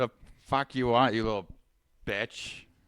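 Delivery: put-on belligerent, rude drunk man's voice. Improv scene, answering a knock at the door: acting a drunk man. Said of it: "a drunk man that wants nothing to do".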